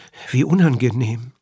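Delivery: sheepish murmur. A secretary reacts to another man's explanation with a sheepish murmur. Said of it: "murmelte kleinlaut der Sekretär".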